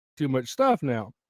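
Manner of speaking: ordinary talk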